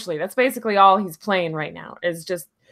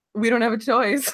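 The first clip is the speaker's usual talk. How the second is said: ordinary talk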